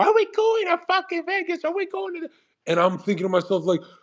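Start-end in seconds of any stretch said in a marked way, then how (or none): 0.0-2.2 very high, shrill, shrieked screaming outburst. Retelling what a girlfriend screamed during a crisis: imitating a girlfriend screaming. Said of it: "my girlfriend's screaming like".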